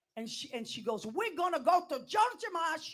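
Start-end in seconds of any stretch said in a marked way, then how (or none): 1.0-2.9 very shrill, very loud, drawn-out voice. Acting out what the grandmother said, but imitating mother's voice instead. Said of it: "that's my mother's voice".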